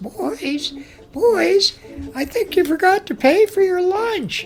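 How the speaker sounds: very high-pitched woman's calling voice. Retelling the lunch story, the speaker voices Mrs. Van calling to the boys: Mrs. Van's real high voice. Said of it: "she had this real high voice".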